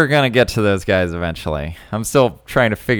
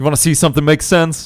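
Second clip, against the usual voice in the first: play-acted menacing, in-your-face delivery, pitched up; 7 semitones higher than usual. Narrating a scene where Elliot gets in Alec's face, menacing as Elliot. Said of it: "all menacingly like".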